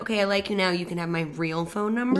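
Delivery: ordinary delivery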